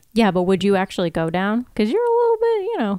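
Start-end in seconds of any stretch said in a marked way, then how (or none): 1.8-2.7 high-pitched teasing voice going up. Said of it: "your voice went up high".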